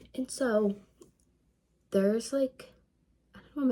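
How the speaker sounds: voice breaking and cracking mid-phrase. A tired speaker thinking aloud mid-sentence, voice cracking. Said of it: "my voice just cracked".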